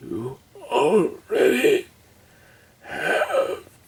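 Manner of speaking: slow, tearful, poorly done put-on dying voice.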